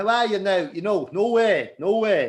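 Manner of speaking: accent from Louth. Showing a listener how people from different counties talk: Louth accent demo. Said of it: "There's a there's a town in Dundalk".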